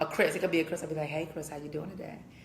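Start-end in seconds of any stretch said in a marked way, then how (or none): 1.1-2.2 very hushed, drowsy, just-woke-up murmur. Retelling how he greets a caller on the phone, in a put-on just-woke-up voice. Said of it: "you sound like you just woke up".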